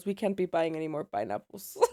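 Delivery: mock thick Mexican accent. Retelling what their dad told their mom, the speaker uses a thick Mexican accent. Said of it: "my dad has a very thick Mexican accent".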